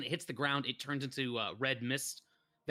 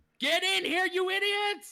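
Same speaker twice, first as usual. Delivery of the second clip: very high-pitched, shrill, loud screaming; 8 dB louder than usual. Voicing someone screaming from the other room as the players listen: screaming. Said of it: "You hear this screaming".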